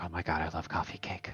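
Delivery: mock dazed muttering under breath. Telling how she reacted when offered a choice, imitating her shell-shocked mumble. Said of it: "mumbles under her breath, like in a shell shocked way".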